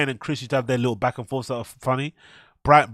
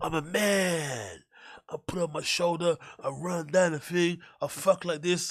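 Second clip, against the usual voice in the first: stand-up comic delivery, higher pitch, "man" stretched out; 5 semitones higher, 8 dB quieter than usual. Doing an impression of a comedian's act: Bryan Callen impression. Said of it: "a brilliant Bryan Callen impression of his comedy".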